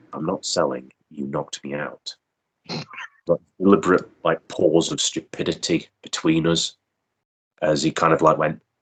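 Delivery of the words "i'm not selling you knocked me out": play-acted, dry, expressionless, flat deadpan. Retelling own reply to the opponent after being knocked out: retelling own deadpan reply. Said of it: "decided to respond rather deadpan".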